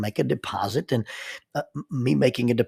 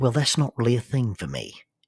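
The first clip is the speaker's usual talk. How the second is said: put-on British English accent. Retelling what a british lady at the bank replied: imitating a british accent. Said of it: "she replied in a little better accent than, than that".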